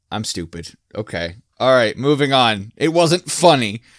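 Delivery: plain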